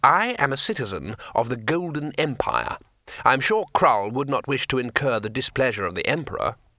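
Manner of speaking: ordinary talk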